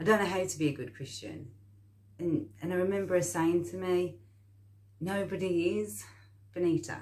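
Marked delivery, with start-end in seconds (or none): 5.0-7.0 put-on strong, thick Jamaican accent. Recalling what a woman said to her, in a strong Jamaican accent. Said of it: "like in a very strong Jamaican accent".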